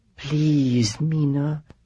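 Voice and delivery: half-whisper with a tremble. Reading a character's plea to another, in a tremulous half-whisper. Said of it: "Heth's tremulous whisper".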